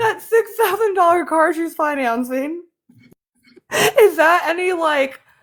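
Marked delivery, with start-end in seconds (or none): 0.0-2.6 speaking while laughing, words bubbling with laughter. Asking about a car she is financing: laughing while talking. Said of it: "I can't even say it without laughing".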